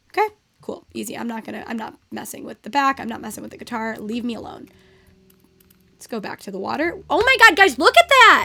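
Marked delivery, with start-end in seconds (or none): 7.0-8.4 thrilled, excited, high-pitched loud yell. A streamer spots something and calls out to viewers, yelling. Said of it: "Sorry, I'm yelling".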